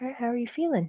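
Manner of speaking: very quiet whisper. Checking on a companion in character: whispering very quietly. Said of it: "whisper very quietly".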